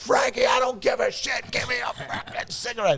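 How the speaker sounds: mock very high, heated, worked-up half-shout. Retelling demanding a cigarette from a friend: imitating own past screaming. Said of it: "crying 'cause I'm screaming at him to give me a cigarette".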